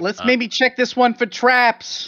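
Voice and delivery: put-on yell, loud shouting. Suggesting a door be checked for traps over a blaring alarm: yelling in character. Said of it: "I yell".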